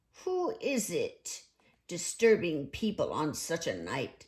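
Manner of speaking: wary, gruff, suspicious and distrustful tone. Narrator reading a character answering the door at night, gruff and suspicious. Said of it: "said a gruff and suspicious voice".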